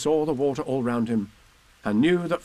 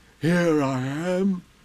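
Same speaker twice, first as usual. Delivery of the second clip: growling character voice; 4 semitones higher than usual. Reading a story, Pooh answers Christopher Robin from behind him, growly Pooh voice. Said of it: "said a growly voice behind him".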